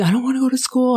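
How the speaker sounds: put-on high, tearful child's voice, sobbing and bawling. Retelling a five-year-old's words at school drop-off: imitating a child bawling. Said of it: "she's bawling".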